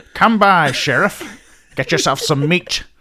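put-on Pennsylvania Dutch accent. Discussing a man's distinct accent, a podcast host imitates him: Pennsylvania Dutch accent.

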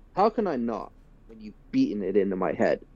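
exasperated, worn-out, fed-up, poorly done put-on voice. Imitating how the new voice actor delivers the line, sounding exasperated. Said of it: "that probably wasn't a good impression".

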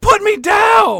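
very high, shrill raging scream, down drawn out. Retelling a movie scene step by step, imitating a scream. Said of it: "she screams out".

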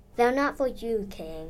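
ordinary delivery

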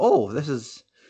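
ordinary talk, nothing marked

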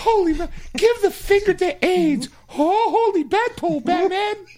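voice cracking and breaking. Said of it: "Robin hits puberty right there".

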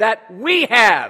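we have stressed, loud and slow. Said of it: "emphasize what I said".

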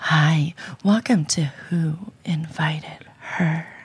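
put-on phone sex line voice. Asked by the other hosts for her best phone sex voice: phone sex voice. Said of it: "Give us your best phone sex voice".

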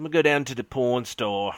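put-on failed Australian accent. Showing how Australians say pawn: bad Australian accent. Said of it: "Australians, when they try to say pawn".

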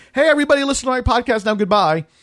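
fast, high mock yelling.

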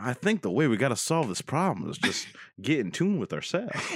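put-on Louisiana bayou swamp accent. Speaker quoting a swamp druid character, in a put-on swamp druid accent. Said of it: "With that accent".

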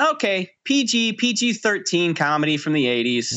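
ordinary talk, nothing marked

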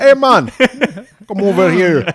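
put-on Jamaican accent. Voicing the demons from a movie in a put-on Jamaican accent.

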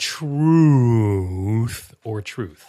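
very slow, deliberate, drawn-out, spelled-out delivery. Restating a game's options to a player, very slow, deliberate. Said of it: "I'll speak slowly so you're sure to understand".

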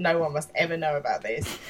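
ordinary delivery

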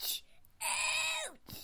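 very high, drawn-out pretend crying yelps. Pretending to get hurt while talking into the microphone: pretend cries of pain. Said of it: "I'm pretending to be ouchies".

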